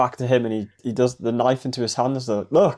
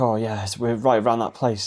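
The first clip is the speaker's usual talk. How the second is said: mock frightened voice; 2 semitones lower than usual. Retelling a film scene where Jimmy tells a story: imitating Jimmy acting scared. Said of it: "he's acting all, like, scared".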